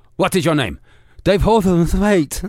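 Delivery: flustered panic. Voicing a spy scene where a man is asked his name, panicked. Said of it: "He's panicked".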